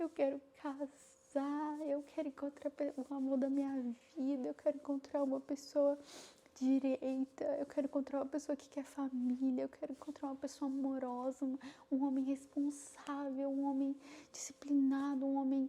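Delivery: play-acted, high, tearful pleading tone. Speaker recounts begging god in prayer to find a husband; retelling tearful pleading. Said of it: "e eu chorava, chorava, chorava".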